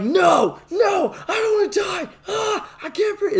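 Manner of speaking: very high, gasping, breathless mock panicked pleading.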